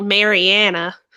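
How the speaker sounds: heavy, drawled Southern accent. Showing how others say the name: heavy Southern accent on 'Mariana'. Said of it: "go super southern with it and be like Mariana".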